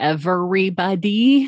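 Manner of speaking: every syllable of everybody hit hard. Making a point to a listener, stress every syllable of everybody. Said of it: "I'm putting emphasis on every syllable of that word on purpose".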